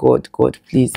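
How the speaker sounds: put-on mumbling under breath. Retelling pushing during labour: retelling mumbling under breath. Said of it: "mumbling in my, like, under my breath".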